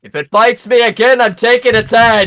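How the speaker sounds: shrill, very high battle-cry shout. Voicing Rune squaring up in combat: yelling as Rune. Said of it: "yell up the whole".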